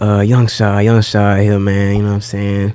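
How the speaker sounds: loud, booming radio host voice. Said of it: "jumped on like a radio personality".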